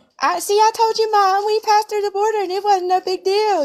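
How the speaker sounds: put-on entitled woman voice. Repeating another speaker's impression while laughing: imitating the Karen impression. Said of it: "The way you were talking a second ago".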